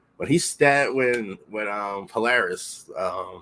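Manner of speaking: ordinary talk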